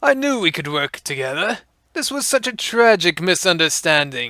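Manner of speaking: smug, self-satisfied, pleased-with-himself tone. Narrator reading the surrendering rogue trader opening the door; smug declaration. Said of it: "the rogue trader opened the door and smugly declared, / The interrogator ordered Sarge to accept the gentleman's surrender and escort him to the shuttle. / "I would like to surrender to the Inquisitio".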